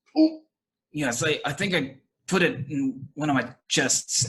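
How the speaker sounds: stuttering, hesitant. A storyteller voicing a shocked man asked to go get a ring, stammering.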